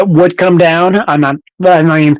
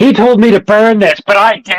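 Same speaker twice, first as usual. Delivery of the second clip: mock, slow, indiscreet blurting with no discretion; 4 semitones higher than usual. Retelling a movie character's line in a tiny bar: imitating someone talking loudly. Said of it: "she's talking really loud".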